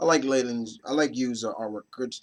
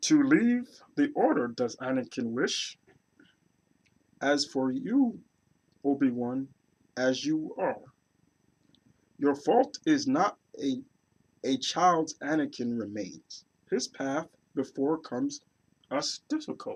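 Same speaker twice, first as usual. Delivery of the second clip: creature character voice; 4 dB quieter than usual. Reading aloud what Yoda says to Obi-Wan, in best Yoda voice. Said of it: "And in my best Yoda voice".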